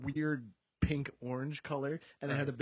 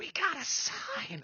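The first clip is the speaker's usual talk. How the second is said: put-on very high, slow, drawn-out drunk whisper; 11 semitones higher than usual. Retelling what the listener said while drunk about a sign, in a Gollum-like whisper. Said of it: "I sound kind of like Gollum".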